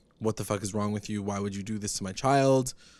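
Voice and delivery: ordinary delivery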